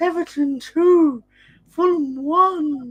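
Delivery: very high, very slow, drawn-out ghostly moan. Retelling a vision of Nan as a ghost giving a score: Nan's ghost voice. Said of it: "she's actually doing the ghost thing".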